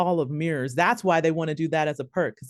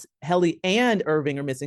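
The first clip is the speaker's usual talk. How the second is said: ordinary talk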